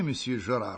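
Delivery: plain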